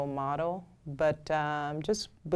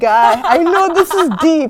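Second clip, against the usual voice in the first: mock crying while talking, higher and louder; 12 semitones higher, 17 dB louder than usual. Retelling listening to music while working: imitating own crying. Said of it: "I'm over there crying like".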